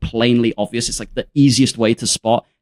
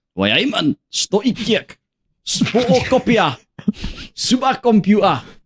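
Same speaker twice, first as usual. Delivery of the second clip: quick, very high, put-on Geordie accent; 10 semitones higher than usual. Calling for the Geordies on the show, then doing a Geordie accent. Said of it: "can we get the Geordies just real quick".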